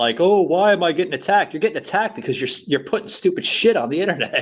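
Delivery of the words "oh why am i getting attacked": weepy, whining, crying complaint. Mocking people who post online and then complain: imitating someone crying and complaining. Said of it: "they're gonna cry and bitch about it".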